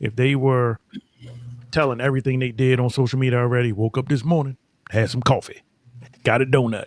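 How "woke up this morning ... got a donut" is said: mock old-fashioned country-sounding voice. Showing how people post about their day online, put-on social media voice. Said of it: "Sound like you got some overalls".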